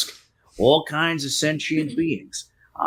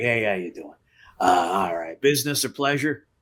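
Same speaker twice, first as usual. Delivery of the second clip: put-on heavy Philadelphia accent laid on thick, low; 5 semitones lower than usual. Acting out someone who comes up and greets the group, thick philly accent. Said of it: "thick Philly accent".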